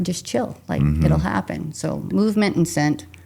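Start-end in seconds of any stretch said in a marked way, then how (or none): 0.0-1.7 hushed, soft, calming whisper. Retelling calming a hunter who got mad, imitating own whisper. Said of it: "I'm always whispering to them".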